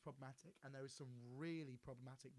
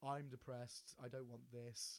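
flat, put-on delivery; 4 dB louder than usual. Describing Richard Ayoade's ice cream cone character and quoting him: deadpan Richard Ayoade impression. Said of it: "he just plays it very deadpan".

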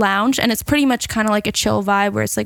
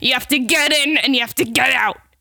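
put-on woman's smoker's voice; 3 semitones higher than usual. Retelling a woman's instructions, imitating her smoker's voice. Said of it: "she has like a smoker's like voice".

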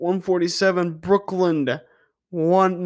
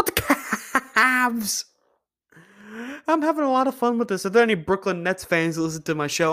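laughing hard through the words; 3 semitones higher, 3 dB quieter than usual. A show host asks listeners about the cavs while laughing a lot. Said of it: "I'm sorry I'm laughing so much".

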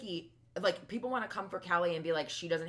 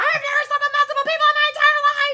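put-on screeching voice, higher and louder; 17 dB louder than usual. Retelling lines the editors cut to: imitating Vicky screeching. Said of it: "all of the time she screeched like that".

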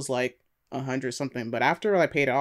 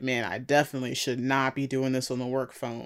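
plain

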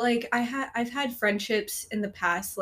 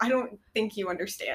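plain

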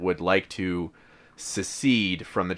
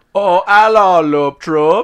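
fake Austrian accent, higher and louder; 11 semitones higher, 13 dB louder than usual. Greeting the podcast listeners: put-on austrian accent. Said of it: "I was going for, like, Austrian".

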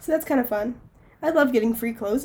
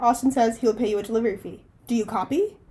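ordinary delivery

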